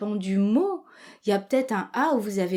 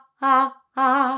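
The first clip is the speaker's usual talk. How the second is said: start of a yawn, higher and louder; 2 semitones higher, 6 dB louder than usual. Speaker demonstrating the beginning of a yawn, start of a yawn. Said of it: "c'est le début du bâillement".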